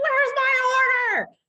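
very high, very loud, shrill, wound-up screaming. Retelling how difficult customers scream at the staff: imitating a customer screaming. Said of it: "scream at us, like".

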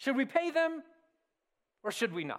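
put-on condescending, patronizing, talking-down tone. Reading aloud their question about paying taxes to Caesar: mock-condescending questioning. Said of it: "I read that in a condescending manner".

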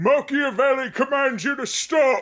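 yelling as loud as possible. A character tries yelling at this thing as his only idea: shouting as loud as possible. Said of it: "as loud as he can".

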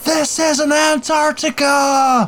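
full-voice shriek, very high, very slow, drawn out. A player voicing their character during a game, screaming at the top of their voice. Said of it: "I'm going to scream at the top of my voice".

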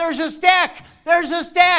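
shrill, very high, loud yelling. Retelling how a younger brother on a bike yelled: imitating Jordan yelling. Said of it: "he starts yelling out".

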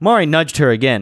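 plain reading voice

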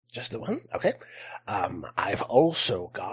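put-on goblin voice. Game master voicing a goblin seller showing his wares, in a goblin voice. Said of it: "is a goblin".

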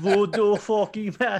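poor put-on Jamaican accent. Speaker admits he can't do the voice, then tries anyway: bad jamaican accent. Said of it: "I can't do Jamaican voice".

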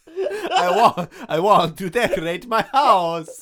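bad, booming, swooping, drawn-out, slow voice. Imitating a character asking about wallpaper: Dracula voice. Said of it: "He says".

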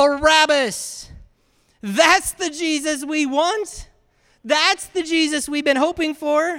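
loud, slow crowd-style yell. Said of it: "they yell out".

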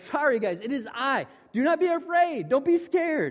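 laughing voice. Explaining a Bible verse, imagining how it was said, imitating Jesus with a laugh. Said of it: "a little bit of laugh in his voice".

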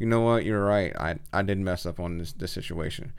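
ordinary talk

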